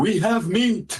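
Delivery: loud proclaiming voice. A player's character raises a staff into the air and proclaims in a loud voice. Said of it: "proclaim in a loud voice".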